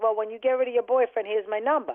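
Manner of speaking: ordinary talk, nothing marked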